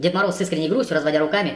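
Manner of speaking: ordinary delivery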